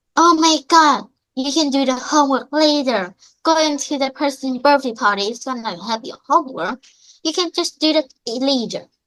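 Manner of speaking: nagging, half-yelled mild scolding. Telling how mom dragged the speaker from homework to a birthday: imitating mom screaming. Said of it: "she's screaming at me like".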